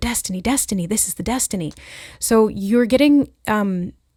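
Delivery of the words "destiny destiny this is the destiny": put-on hushed, excited whisper. Describing what they keep saying to each other, retelling a hushed excited whisper. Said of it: "almost in like a hushed but excited voice, like whispering it to each other".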